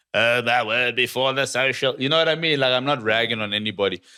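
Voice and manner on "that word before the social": put-on complaining, griping old-timer voice. Imitating an old person complaining about social media: Mel Miller voice. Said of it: "why did you do the Mel, Mel Miller voice".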